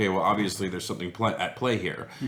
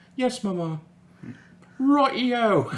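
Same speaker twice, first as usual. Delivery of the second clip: put-on British accent, much higher pitch; 14 semitones higher, 4 dB louder than usual. A speaker acts out an imagined child answering its mother, in a british accent. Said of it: "practice more of your British accent".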